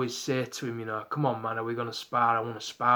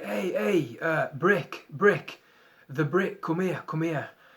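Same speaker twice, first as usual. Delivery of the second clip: calling out across a distance, pitched up; 5 semitones higher than usual. Retelling how a gym sparring partner called across the gym: imitating someone shouting across. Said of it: "he shouts me over".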